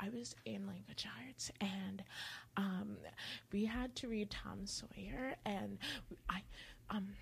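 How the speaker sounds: mock nervous whispering. Retelling classmates confessing at a locker: imitating a nervous whisper. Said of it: "very nervous and very, like, whispery about it".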